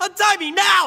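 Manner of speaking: very high, loud, full-throated yelling. A tied-up captive shouts after the woman who is leaving, yelling. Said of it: "I'll stop yelling".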